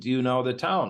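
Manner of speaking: usual speaking voice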